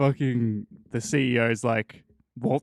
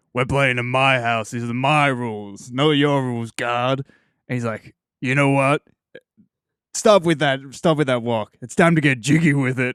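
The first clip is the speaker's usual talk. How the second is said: put-on yelling voice, louder; 4 dB louder than usual. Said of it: "it's really like this when he yells".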